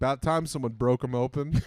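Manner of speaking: laughing, heavy, thick sarcasm.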